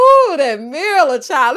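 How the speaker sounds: loud, slow, drawn-out amused ooh.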